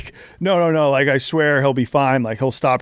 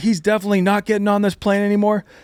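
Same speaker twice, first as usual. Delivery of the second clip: mock loud scolding shout, firm and final; 8 semitones higher than usual. Retelling how a woman yelled at the speaker about a boy boarding a plane, retelling her yelling. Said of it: "while she's yelling at me about this".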